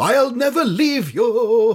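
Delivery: fake upper-class voice. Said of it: "but in posh voices".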